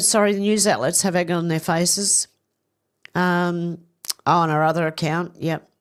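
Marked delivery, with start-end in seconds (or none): none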